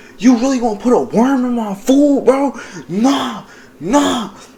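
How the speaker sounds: getting mad, voice rising. Retelling a friend's reaction to a worm in his food: imitating someone getting mad. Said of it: "He getting mad".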